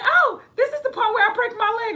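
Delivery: very high, loud, play-acted delivery. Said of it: "she's mimicking the part like".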